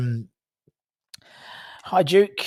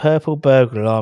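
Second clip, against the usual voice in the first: ordinary talk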